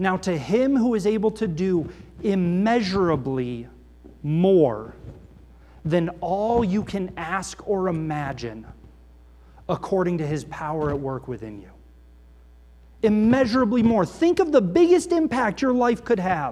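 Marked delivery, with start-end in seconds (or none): 0.0-11.7 slow, deliberate, each word weighed and set down. Reading a passage aloud so listeners attend to each word: slow, deliberate reading. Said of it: "I'm going to say this slowly so you can pay attention to each of these deliberate words".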